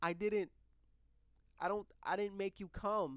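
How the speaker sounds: mock weepy, tearful crying delivery, high voice. Retelling what a woman said, imitating her crying. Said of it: "This is my impression of her. Keep in mind, she, she she's crying".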